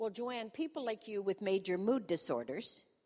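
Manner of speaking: ordinary talk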